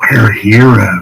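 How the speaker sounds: whispering. Voicing a character who leans in, hand to mouth: whisper. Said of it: "and he'll whisper".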